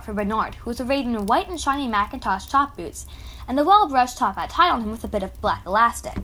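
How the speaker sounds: plain reading voice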